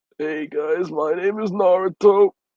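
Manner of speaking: hoarse, worn-out voice. Joking that Naruto is a heavy smoker: hoarse Naruto voice. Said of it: "sounds like he lost his voice".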